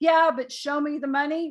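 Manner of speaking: usual speaking voice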